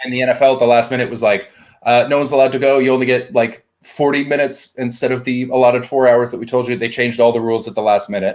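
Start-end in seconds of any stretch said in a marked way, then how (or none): none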